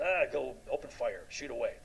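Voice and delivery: ordinary talk, nothing marked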